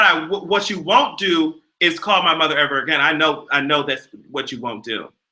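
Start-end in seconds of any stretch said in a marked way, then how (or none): none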